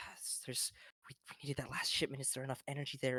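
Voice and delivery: fast, whispered, hushed muttering under the breath. A narrator voices a man furiously writing equations at a desk; muttering to himself. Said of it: "you hear him muttering like".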